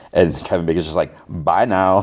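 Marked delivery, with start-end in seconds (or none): 1.2-2.0 mock snide, dismissive, rude and sarcastic. Retelling a character's reply to the pastor: imitating a rude, loud, sarcastic goodbye. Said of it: "rude, loud and sarcastically".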